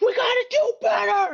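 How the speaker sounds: acted shrill, shrieking, out-of-control angry shout. Retelling a halftime moment when a teammate loses it: imitating a teammate losing it. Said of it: "loses it".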